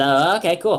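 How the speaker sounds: pixie character voice. Voicing a pixie accepting an offered drink: voicing the pixie. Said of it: "And the pixie goes".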